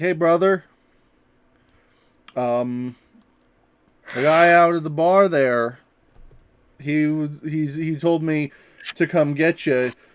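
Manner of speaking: deceptive, bluffing, lying tone. Voicing Lyle, bluffing a guard to get him to leave: Lyle lying to a guard. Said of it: "And he's like".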